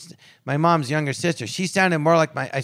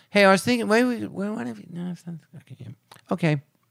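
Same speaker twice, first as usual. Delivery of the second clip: put-on mumbling, pitched higher; 4 semitones higher than usual. Speaker imitates how they used to talk, mumbling. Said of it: "Used to mumble?".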